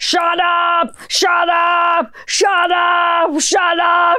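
put-on very slow, drawn-out bellow, each word, Austrian accent. Imagining kids climbing all over him in a movie: imitating Arnold Schwarzenegger yelling in Austrian accent. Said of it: "yelling at everybody in Austrian".

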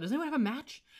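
mock high holler. Retelling a tv scene where a character hollers out a question: imitating a character hollering. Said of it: "kinda, like, hollers out".

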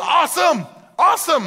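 thrilled, excited outburst, very high, shouted. Retelling the man's reply as Jesus names the commands, acting out excitement. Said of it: "He's just building excitement".

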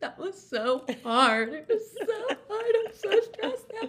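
very high, loud, tearful sobbing words. Retelling what was said to a kind stranger at the airport: imitating own past crying. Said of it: "the tears are just streaming down my face".

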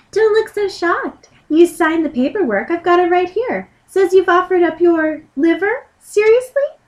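tiny, high little fairy voice. Playing the organ fairy who says a bill is due, the speaker uses a little fairy voice. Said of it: "I should make it like a little fairy voice".

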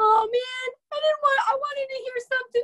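whiny, high, squeaky whine.

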